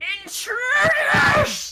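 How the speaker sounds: very high, very loud, screechy, squeaky, furious yell. Game master voicing an unseen speaker the players hear: squeaky, furious yell. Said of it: "hear a s- kind of squeaky voice furiously yelling".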